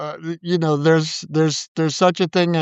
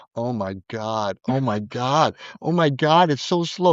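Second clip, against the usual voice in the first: low, anguished muttering under the breath; 4 semitones lower than usual. Retelling sitting in the audience as a piece plays too slowly: retelling own anguished muttering. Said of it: "and I'm in the audience going".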